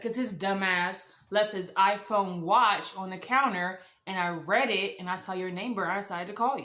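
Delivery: ordinary delivery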